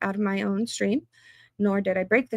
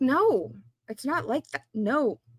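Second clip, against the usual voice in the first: mock protesting outburst, yelling held in check; 5 semitones higher than usual. Retelling yelling back at trials and legal commentary: imitating own yelling. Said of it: "and I'm yelling".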